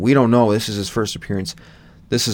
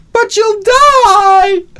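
very high, very loud, shrill scream, "die" drawn out; 11 dB louder than usual. Imitating a film character's line to another viewer: imitating a scream. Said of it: "The way she sc-".

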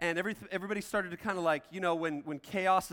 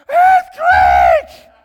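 put-on shrill yell, much higher, much louder; 23 dB louder than usual. Telling how a teacher panicked in the auditorium: retelling a very high-pitched yell. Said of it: "he yells like a girl with the highest pitch ever".

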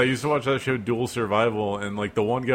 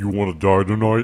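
distorted, modulated voice-changer sound, horror-villain style; 4 dB louder than usual. Describing a parody scene, a performer speaks in a Scream voice-modulator killer voice. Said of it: "the scream voice modulator".

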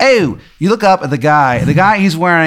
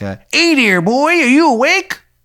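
terrible put-on Maryland accent, much higher; 11 semitones higher than usual. Play a guy looking at someone who has just woken up, in a terrible Maryland accent. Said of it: "he's got like a terrible Maryland accent".

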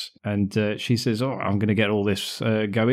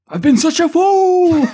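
very high, very loud, shrill shout, "fool" stretched; 11 dB louder than usual. Recounting what a proud dad says to his son, retelling a shout. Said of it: "He shouts that".

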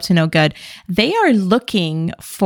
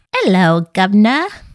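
put-on Cockney accent, movie villain style; 2 semitones higher than usual. Talking about Hollywood villains' accents, in a Cockney accent. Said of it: "that Cockney accent".

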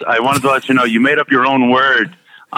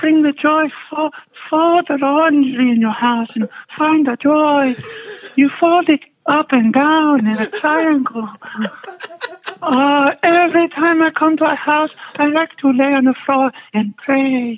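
put-on Japanese accent, pitched very high. Asked by another speaker to do the tidying lady, speaker gives a Marie Kondo impression. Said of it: "your impression of the Japanese lady".

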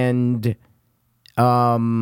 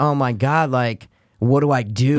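normal talking voice

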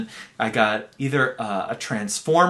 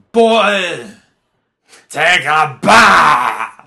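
mock-angry kid voice, much louder, higher, slower; 5 semitones higher, 10 dB louder than usual. Retelling a boy who always tried one phrase, the speaker is imitating an angry boy. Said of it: "But he'd always be very angry".

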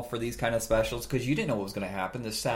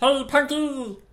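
very high, loud cartoon-creature voice; 8 dB louder than usual. Doing the voice of Glomer from the Punky Brewster cartoon: voice of Glomer. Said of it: "Glomer from the Punky Brewster cartoon was the same voice".

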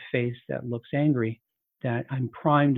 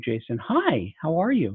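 bright, sing-song tone; 4 semitones higher than usual. Greeting someone named Jason, with a bright vocal tone. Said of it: "With a bright look in my eyes and a bright vocal tone".

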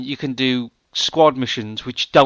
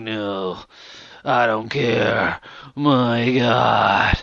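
put-on gravel, dragged very slow, hero-style voice; 2 semitones lower than usual. Mocking a game's main character: imitating a gravelly game hero voice. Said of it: "one of those gravelly voices".

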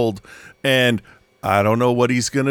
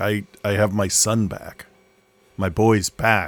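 put-on choked-up voice, lower; 3 semitones lower than usual. Retelling a president talking about his son: imitating Biden getting choked up. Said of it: "he gets real choked up".

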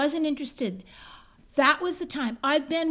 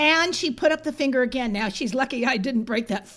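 normal talking voice

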